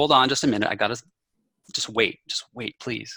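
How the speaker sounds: usual speaking voice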